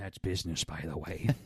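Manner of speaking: sly, soft, hushed half-whisper. Retelling how Trump answered Hillary Clinton's roast: half-whispering Trump impression. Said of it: "Trump just whispers".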